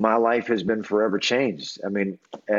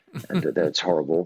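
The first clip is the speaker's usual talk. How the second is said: ordinary talk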